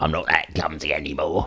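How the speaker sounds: odd, weird, goblin-like man's character voice. Speaking as a character to the group, in a weird goblin man voice. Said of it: "weird goblin man".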